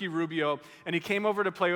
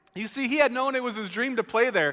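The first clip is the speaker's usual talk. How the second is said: ordinary talk, nothing marked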